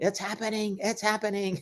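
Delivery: play-acted very high-pitched shrieking scream. Quoting Michael in the office scene: imitating Michael screaming. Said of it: "with Michael screaming".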